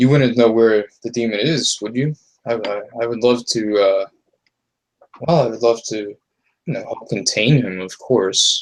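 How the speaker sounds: playfully needling, sly, almost mocking tone. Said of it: "his voice is getting a little, ... teasing almost".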